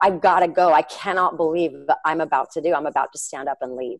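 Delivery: ordinary delivery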